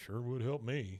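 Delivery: put-on muttering under breath. Retelling a cartoon scene, Hank replies to a refusal: Hank muttering under his breath. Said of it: "kinda under his breath".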